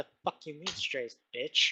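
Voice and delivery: low, very quiet, offended mutter under the breath. Voicing an offended character at the table: muttering quietly under breath. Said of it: "under her breath muttering to herself quietly".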